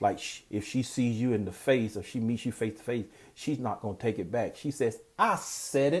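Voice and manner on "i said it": mock brazen, unapologetic, bold, pitched-up delivery. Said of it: "she used it very boldly".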